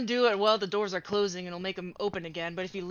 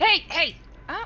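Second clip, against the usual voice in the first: very loud, shrill, high-pitched shouting; 9 semitones higher, 8 dB louder than usual. Stopping another player during a game, yelling. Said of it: "Why are you yelling?".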